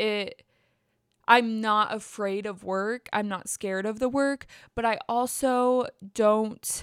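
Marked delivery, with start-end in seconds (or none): none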